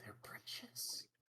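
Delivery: hushed, very quiet, leaning-in whisper. A character leans over to another and speaks to him, whispering. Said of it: "leans over to Waylon and whispers".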